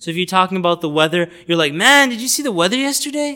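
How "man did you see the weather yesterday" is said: high, confident, passionate delivery. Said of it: "You just say it confidently".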